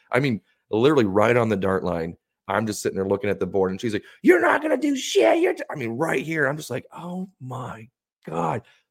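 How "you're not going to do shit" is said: put-on shrill, very high-pitched, loud jeering scream. Darts player recalls a lady screaming taunts during their throw, retelling a scream. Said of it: "I had one lady literally screaming at me as I'm throwing".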